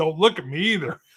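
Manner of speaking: mock angry yell. Retelling a chief laying into them: imitating a boss yelling. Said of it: "and he yells".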